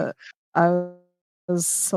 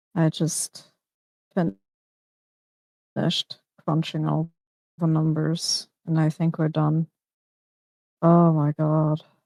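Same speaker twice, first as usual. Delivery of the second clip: talking really quietly and softly. Sharing news while someone sleeps and snores nearby: talking really quietly. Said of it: "I'm talking really quietly".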